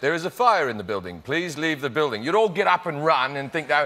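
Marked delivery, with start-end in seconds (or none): 0.0-2.2 smart-sounding, put-on British accent. Comparing how accents sound to listeners, speak in a british accent. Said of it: "there was a British accent that went".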